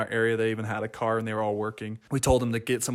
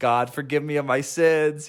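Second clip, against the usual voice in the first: loud, raised hollering, repeated over and over; 4 semitones higher, 5 dB louder than usual. Retelling how a sick companion kept yelling that morning, imitating Elder Escobar yelling. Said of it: "He kept yelling like".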